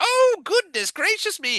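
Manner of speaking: put-on high-pitched elderly woman voice. Voicing an older woman upstairs talking about customers: Mrs. Doubtfire voice. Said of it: "very Missus Doubtfire kind of thing".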